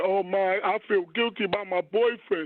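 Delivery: put-on crying voice, words said through weeping. Retelling a woman's words, imitating her crying and screaming. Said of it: "and started crying and screaming".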